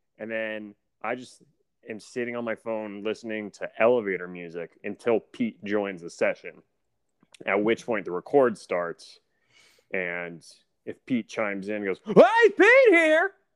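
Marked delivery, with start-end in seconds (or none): 12.1-13.3 booming, loud, high-pitched shout. Speaker mimics Pete joining the recording session: imitating Pete's loud greeting. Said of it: "really loudly".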